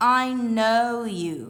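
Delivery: slow, loud "I know you", silent k. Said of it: "Think of the word know".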